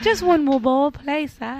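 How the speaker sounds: high, pleading mock orphan voice.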